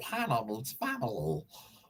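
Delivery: low, dropped, put-on cartoon character voice. Doing a line a co-host calls a pretty good Stitch, Stitch voice. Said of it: "That's a pretty good Stitch".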